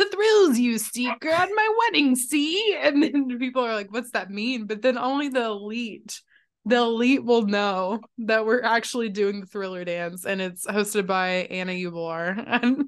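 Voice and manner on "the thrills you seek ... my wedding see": little high, loud leprechaun-style voice. Voicing an imagined hint at the bottom of it, in a leprechaun voice. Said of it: "You sounded like a leprechaun".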